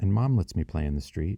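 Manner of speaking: plain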